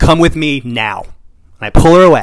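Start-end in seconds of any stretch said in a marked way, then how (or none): 0.0-1.0 firm, authoritative, in-charge, commanding tone. Retelling taking someone's hand and leading her away: imitating a commanding voice. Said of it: "with this really commanding voice".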